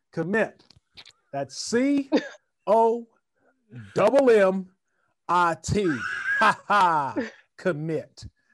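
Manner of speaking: booming, drawn-out, high, slow, loud belting. Retelling spelling words at a spelling bee: Jeff Jarrett accent. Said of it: "And I would do it in the accent".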